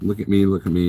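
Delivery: ordinary delivery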